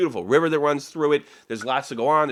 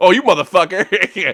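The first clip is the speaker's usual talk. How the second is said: put-on obnoxious American voice, louder outburst; 5 semitones higher, 8 dB louder than usual. Imagining confronting the man with the British accent, acting out an obnoxious American. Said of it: "some obnoxious American horse shit to do".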